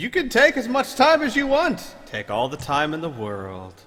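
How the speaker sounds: goading, mocking, taunting voice. Voicing a figure who taunts the players: mocking voice. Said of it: "the same mocking voice and say".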